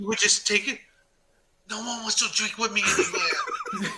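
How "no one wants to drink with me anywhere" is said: put-on mild Japanese accent with swooping pitch. Recalling how Dave's voice changed whenever he got drunk: Dave's mild Japanese accent. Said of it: "I was waiting for subtitles to come out".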